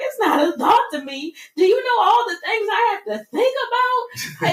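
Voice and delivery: acted sobbing, very high tearful outburst. Recounting breaking down crying when someone walked into the room, retelling her own breakdown. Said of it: "after I started breaking down".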